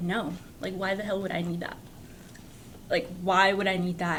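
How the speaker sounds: normal talking voice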